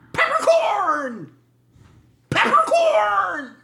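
piercing, shrill, very high yelling holler. Narrating Kegel at the door, calling the password through the keyhole, retelling a yell. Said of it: "and he yells".

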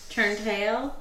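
fake Southern accent. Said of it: "That's the worst southern accent I just did".

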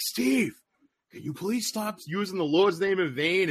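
irritated, fed-up tone. Retelling how Rude finally asked Steve to stop: imitating an annoyed Rude. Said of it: "Rude was getting more and more pissed".

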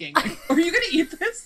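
alarmed, panicked outburst, high-pitched and loud. Retelling asking someone about their cereal left sitting out: imitating own panicked self.

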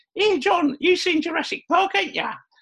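put-on very high-pitched voice with Essex accent. Retelling what Sarah said to John, imitating Sarah's Essex accent. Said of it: "Sarah's got an Essex accent".

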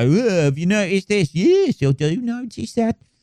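high-pitched mock Birmingham accent.

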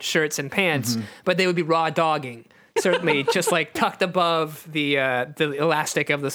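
plain

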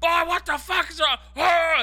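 high-pitched, loud, angry delivery.

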